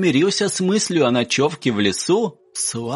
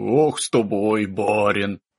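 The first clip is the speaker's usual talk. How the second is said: grumbling, complaining tone; 9 semitones lower than usual. A driver climbing into his cart answers his passenger; grumbling. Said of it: "проворчал Клим".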